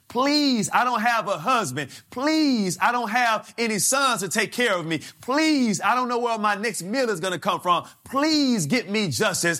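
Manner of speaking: put-on begging, pleading voice. Describing a woman going before a judge, the speaker acts out her begging plea. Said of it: "A plea sounds like when you are just begging".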